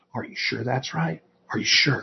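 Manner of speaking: creepy whisper, soft and breathy, very close. Acting out an instructor whispering doubts in a trainee's ear: creepy Biden whisper. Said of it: "start whispering to you".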